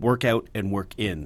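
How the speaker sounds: normal talking voice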